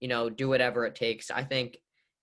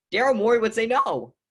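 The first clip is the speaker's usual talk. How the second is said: voice breaking, cracking very high and loud; 10 semitones higher, 8 dB louder than usual. Arguing about a hypothetical player trade, the speaker's voice is cracking. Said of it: "and that was a voice crack".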